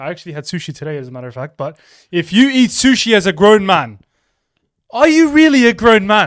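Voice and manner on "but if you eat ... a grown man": put-on British accent slipping in, slow and loud. Doing an impression of a man, the speaker slips into a British accent. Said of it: "you're getting too much of the British accent there".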